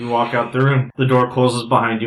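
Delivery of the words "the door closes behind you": ordinary talk, nothing marked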